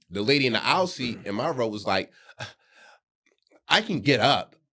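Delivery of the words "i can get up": sassy, put-out tone with attitude. Retelling what a seated passenger said, imitating it with attitude.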